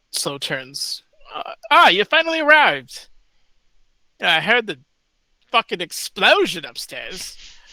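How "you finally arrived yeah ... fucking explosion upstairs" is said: put-on swooping old man voice. Voicing an old man who has just stopped banging: old man character voice. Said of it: "The voice is on point".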